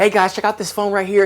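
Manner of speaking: pushy salesy tone. Showing how not to sound in a phone video: pushy, salesy voice. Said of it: "How not to sound salesy. You do not want to do a video".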